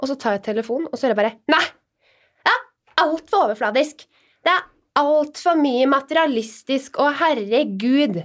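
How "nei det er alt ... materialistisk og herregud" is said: high, scolding, telling-off voice. Retelling how the speaker's mother reacted on the phone, imitating mom scolding. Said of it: "Og jeg kjefta meg ned".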